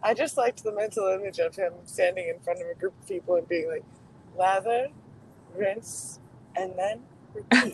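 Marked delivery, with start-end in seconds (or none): 4.4-7.8 play-acted slow, soothing, calm delivery. A group member pictures a man addressing a group, imitating his calming voice. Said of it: "in his calming voice".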